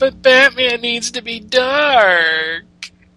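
very slow, high, shrill whine stretching dark. Mocking people who complained about Batman, mock-whiny voice. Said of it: "please do this in a whiny voice".

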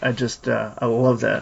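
plain

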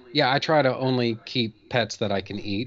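ordinary delivery

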